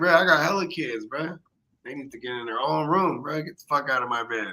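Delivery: ordinary delivery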